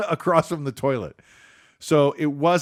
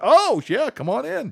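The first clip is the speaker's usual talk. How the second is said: put-on very high oh of sudden realization; 10 semitones higher than usual. Retelling a restaurant visit, the speaker quotes the man who seats them: mimicking sudden realization. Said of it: "like he just figured it out".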